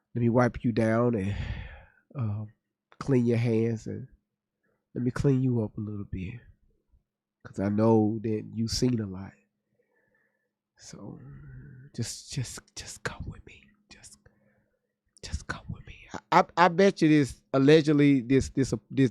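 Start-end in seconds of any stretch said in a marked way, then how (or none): 0.1-15.9 whisper, lower and quieter. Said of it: "the same way Erica was whispering".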